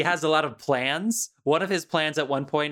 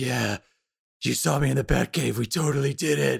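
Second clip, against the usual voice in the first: strained, creaky, rough voice forced from squeezed throat; 3 semitones lower than usual. Explaining vocal tension, imitate a man who talks in a tense, forced CollegeHumor Batman voice. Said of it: "he talks like the Batman from the College Humor sketches".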